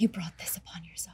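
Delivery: very quiet, breathy whisper, barely any voice. Speaking in character to Victor, whispering. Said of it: "in a whisper, whisper to Victor".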